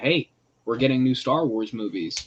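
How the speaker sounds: plain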